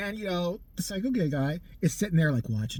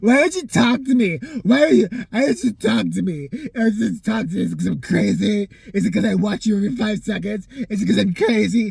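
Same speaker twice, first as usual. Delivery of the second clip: mock-drunk pleading voice, louder; 5 semitones higher, 10 dB louder than usual. Retelling a scene, quoting a guy confronting another guy; imitating a drunk guy pleading. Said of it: "he's all drunk and shit like that".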